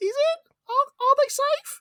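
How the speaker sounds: very high, slow put-on voice, drawn out. Podcast host [name] announcing this week's question, in a high-pitched voice. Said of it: "I did that high pitched voice thing".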